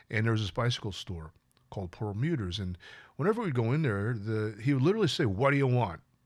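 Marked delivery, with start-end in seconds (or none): 5.2-6.0 put-on bothered, curt tone. Retelling how a bicycle store owner greeted customers: imitating a shopkeeper's bothered tone. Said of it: "in that kind of tone".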